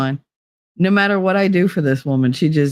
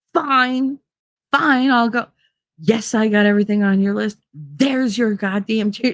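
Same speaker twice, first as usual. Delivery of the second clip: put-on sassy, bratty tone, higher; 6 semitones higher than usual. Retelling own past replies to a grandmother: imitating own sassy attitude. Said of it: "I did it with attitude".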